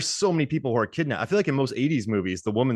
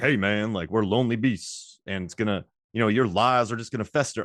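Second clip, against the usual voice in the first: put-on southern US-style accent. Discussing a film's scenes, the speaker quotes Luther in a southern accent. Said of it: "Why am I giving him a southern accent?".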